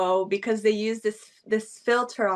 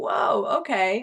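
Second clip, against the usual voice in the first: put-on startled, taken-aback, shocked exclamation. Speaker recounts a woman suddenly stripping, retelling own shocked reaction. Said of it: "Like I was in shock and I was like".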